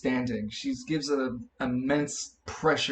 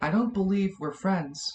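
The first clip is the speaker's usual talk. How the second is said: soft, gentle voice, slightly higher pitch; 6 semitones higher than usual. A woman in the church answers someone who called her friend, in a soft voice. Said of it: "she says in a soft voice".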